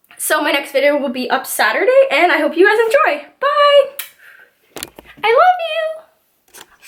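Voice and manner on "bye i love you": very high, very slow, drawn-out breaking voice. Signing off a video to viewers, voice cracking. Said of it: "my voice cracked there".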